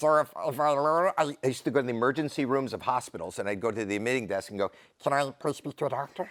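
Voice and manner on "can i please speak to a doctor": high voice like after a lungful of helium. A comedian acts out asking an emergency-room desk for a doctor, in a helium voice. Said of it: "It sounds like a helium".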